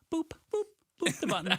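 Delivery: squeaky, very high-pitched voice. Showing someone the right way to say a sign-off line: high-pitched voice. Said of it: "High pitch".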